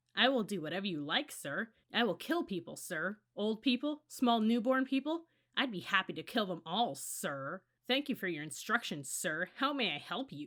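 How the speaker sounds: taunting, scornful, cruel sarcasm. Narrating a character mimicking the voice that gave instructions, cruel, sarcastic mimicking. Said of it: "Jonas mimicked in a cruel, sarcastic voice".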